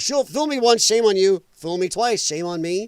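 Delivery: ordinary delivery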